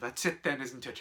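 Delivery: ordinary delivery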